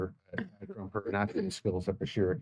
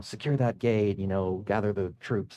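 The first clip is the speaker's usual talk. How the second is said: ordinary talk, nothing marked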